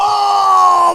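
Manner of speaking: shouting with excitement.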